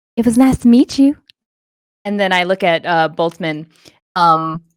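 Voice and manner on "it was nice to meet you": whispered, hushed speech. Casting a message spell so a departing character hears: whispering. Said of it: "and you hear a whisper".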